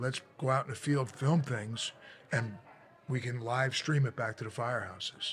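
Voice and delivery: plain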